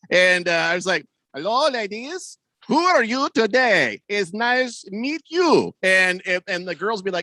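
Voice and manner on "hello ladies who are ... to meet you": slow, pitched-up fake foreigner voice. Retelling walking with a friend, greeting girls: imitating pretending not to know English. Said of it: "I pretended like I didn't know English".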